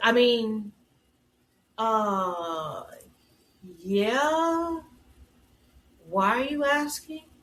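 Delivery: put-on, very slow, awkward, hesitant stalling. Retelling a mom answering her daughter's question, imitating an awkward mom. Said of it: "how awkward the mom was".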